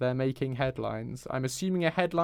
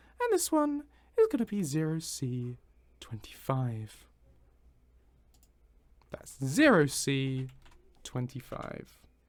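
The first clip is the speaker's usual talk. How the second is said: sing-song bingo caller announcer cadence. Renumbering items while applying a script, the speaker reads a code like a bingo announcer. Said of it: "I don't know why I said that like a bingo announcer".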